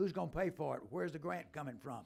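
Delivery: ordinary delivery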